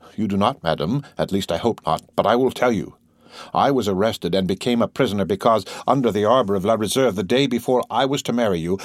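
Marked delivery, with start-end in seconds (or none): none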